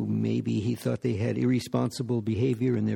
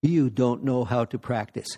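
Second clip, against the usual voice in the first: chiding, scolding tone, words one by one. Retelling what he said each time he hit people during zazen, loud scolding voice. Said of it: "he said in a loud voice each time".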